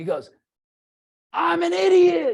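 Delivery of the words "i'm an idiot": shrill, very high screamed outburst. Retelling how an eighty-something man jumped up: imitating someone screaming. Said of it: "And he screams it".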